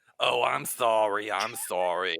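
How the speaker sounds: slow, very drawn-out, apologetic tone. Imitating the neighbor's apology on request: imitating the neighbor apologizing. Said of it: "You want me to do it for you?".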